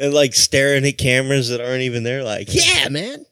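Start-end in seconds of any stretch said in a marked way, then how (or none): 2.5-3.1 very high, squeaky, badly done celebrity voice. Describing a comedian staring at cameras, then an Aziz Ansari impression. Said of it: "That was my Aziz impression".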